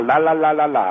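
nonsense la-la babble in a mock thick Cuban accent.

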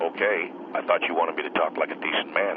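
plain

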